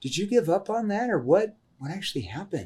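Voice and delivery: caring, worried tone. Demonstrating how to ask a prospect a follow-up question: concerned tone. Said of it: "This is a concerned tone".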